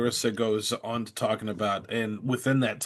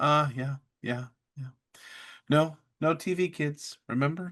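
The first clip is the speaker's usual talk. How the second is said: very quiet soft voice, higher pitch; 5 semitones higher than usual. Retelling a man's reply after being reminded of a no-TV rule, very quietly. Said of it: "he just very quietly".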